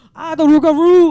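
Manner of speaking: put-on Cajun accent. Retelling a friend's reaction to a shirt worn to work, imitating Felicia's Cajun accent. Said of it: "doesn't have like a super thick Cajun accent".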